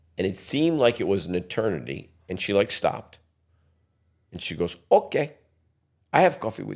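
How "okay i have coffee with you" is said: put-on Polish accent, pitched a bit up. Retelling asking a woman to coffee, quoting her answer in a Polish accent. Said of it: "That's a Polish accent".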